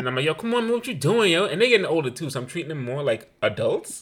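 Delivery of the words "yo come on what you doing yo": put-on Brooklyn street-style accent, pitched up. Speaker retells talking to the kids in a brooklyn accent. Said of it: "I've been Brooklyn on them a lot".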